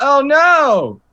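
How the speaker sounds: shrill, very high, very loud fake alarm, drawn-out "no". Faking a slip and fall as a distraction: put-on cry of alarm. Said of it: "I am going to slip and fall onto my back".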